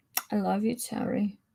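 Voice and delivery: soft hushed whisper. Trading affectionate lines with another speaker, in a gentle whisper. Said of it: "Why are we whispering so gently?".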